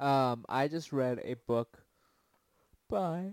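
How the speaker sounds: talking through a yawn. In a casual chat, talking through a yawn. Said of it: "sorry, I'm yawning".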